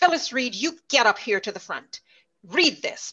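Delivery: play-acted menacing, threatening tone. Retelling how a frustrated teacher called her to the front: imitating a threatening teacher. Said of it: "very threateningly".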